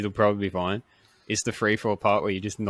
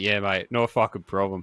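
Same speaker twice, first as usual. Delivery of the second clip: put-on cocky tone. Acting out getting in the plane before a skydive: acting cocky. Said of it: "I'll get in the plane all cocky".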